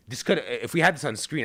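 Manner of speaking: ordinary talk, nothing marked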